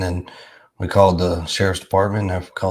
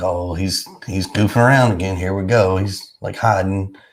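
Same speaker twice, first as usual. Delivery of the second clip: ordinary talk, nothing marked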